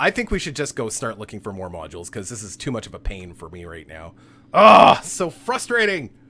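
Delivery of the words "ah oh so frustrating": very loud, drawn-out, exasperated, frustrated yelling. Fed up while trying to sort out the modules, frustrated yelling. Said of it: "Sorry for yelling".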